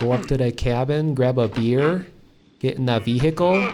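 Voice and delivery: put-on Minnesota accent. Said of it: "most people from Minnesota kinda talk like this".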